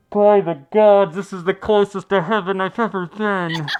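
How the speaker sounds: very loud, high call, smothered and muffled. Storyteller voicing a man who has sunk into a feather bed, muffled voice calling out. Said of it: "you just hear a muffled voice call out".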